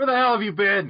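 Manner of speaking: loud, high-pitched yelling.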